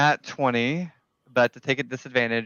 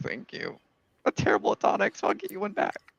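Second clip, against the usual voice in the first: whispered, breathy, weepy, tearful voice; 9 semitones higher, 4 dB quieter than usual. Voicing a character who thanks someone for a tonic, weeping tears of joy. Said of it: "weeping tears of joy".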